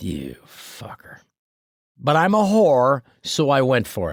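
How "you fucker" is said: hushed, whispered mutter under the breath. Retelling what was said quietly when the host asked for the joke: imitating muttering under breath. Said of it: "Under my breath".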